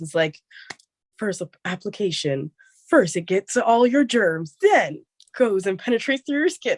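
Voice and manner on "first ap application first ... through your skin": loud, high sports play-by-play commentator voice. Picturing how a commentator would describe the product: commentator voice. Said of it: "like, a commentator voice".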